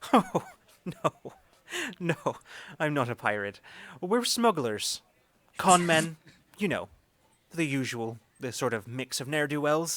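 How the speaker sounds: jovial, hearty, loud, chuckling through the words. Clapping both hands on a companion's shoulders, a character answers, chuckling heartily. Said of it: "just chuckling heartily as he just says".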